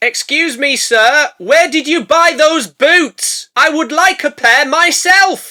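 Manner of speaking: shrill, very loud, high yell at full volume. A character speaks to the bones of a dead man, shouting. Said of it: "Why are you shouting?".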